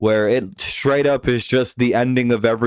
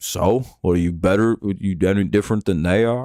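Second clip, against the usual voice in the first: imitated Southern man voice, Southern accent; 3 semitones lower than usual. Mocking fans in a put-on voice, doing a Southern guy impression. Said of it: "That's my best Southern guy impression".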